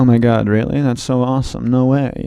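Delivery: low, flat, unenthusiastic deadpan monotone. Describing comedians' deadpan style, speaker demonstrates a flat deadpan monotone. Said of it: "they have very monotone".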